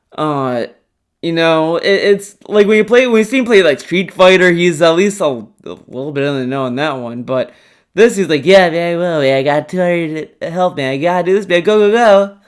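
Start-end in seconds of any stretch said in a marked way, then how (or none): 8.5-12.3 mock bored, detached, phoned-in tone. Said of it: "he doesn't sound immersed or interested".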